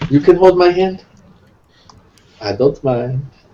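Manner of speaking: eerie, unsettling, creepy low voice. Offering another character a hand in the dark: creepy voice. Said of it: "That was such a creepy".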